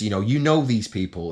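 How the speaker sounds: ordinary delivery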